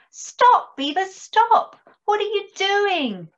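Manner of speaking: squeaky, very high little voice. Dormouse, standing on her hind legs, calls to Beaver tugging at a tree, squeaking. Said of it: "squeaked Dormouse".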